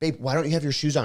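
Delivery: mock annoyed voice. Retelling how she asks when she gets annoyed: imitating someone annoyed. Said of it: "but if she gets annoyed, she's like".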